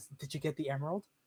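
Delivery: quiet, hushed voice. Storyteller voices a character asking the players a question, in a quieter voice. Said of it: "in a quieter voice he asks".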